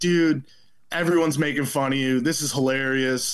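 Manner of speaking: ordinary talk, nothing marked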